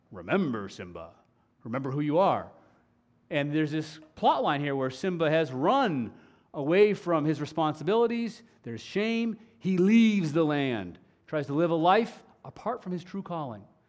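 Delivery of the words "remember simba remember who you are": deep, low fatherly voice. Explaining a Lion King plot point to listeners, doing Mufasa's deep voice. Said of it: "Remember the deep voice of his father".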